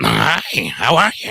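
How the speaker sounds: rusty puppet voice attempt.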